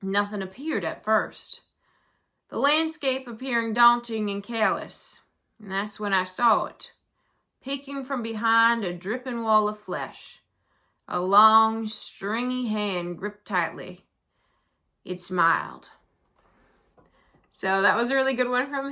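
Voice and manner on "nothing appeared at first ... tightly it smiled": cowboy-flavored Southern US accent. Reading a submitted spooky story aloud, southern cowboy accent. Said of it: "read this in a southern kind of cowboy accent".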